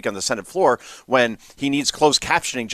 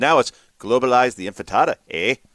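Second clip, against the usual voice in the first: put-on Minnesotan accent, done as a joke. Mocking a Democrat from Minnesota: mock Minnesota accent. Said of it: "Oh, that accent".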